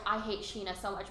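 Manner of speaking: plain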